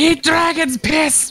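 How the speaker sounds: very high, shrill battle-cry yell. Voicing a character who yells while throwing a Molotov: in-character yell. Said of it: "You just hear him yell".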